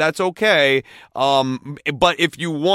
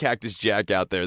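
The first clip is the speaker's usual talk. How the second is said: ordinary talk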